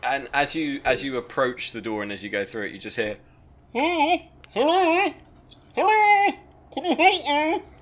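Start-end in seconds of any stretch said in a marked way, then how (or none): 3.7-7.6 very high, slow, drawn-out, odd calling voice. Voicing someone trapped who calls out for help: strange voice. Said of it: "That person's got a strange voice".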